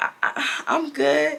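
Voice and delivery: slow, high, nervous stammering over the first word. Retelling her answer to a boy's greeting, retelling her own stutter. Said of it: "I'm stuttering".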